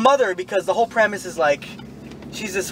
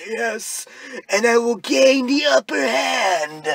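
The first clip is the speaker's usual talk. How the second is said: high, strained, sore-throated voice; 5 semitones higher than usual. Mocking how a character sounded, in a constipated, sore-throat voice. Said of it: "he sounded constipated or had a sore throat".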